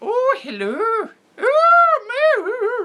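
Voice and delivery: very high, swooping, sing-song English voice, "oh" drawn out. Showing how it would sound done more English, in a Mrs. Doubtfire voice. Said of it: "Missus Doubtfire would have more English".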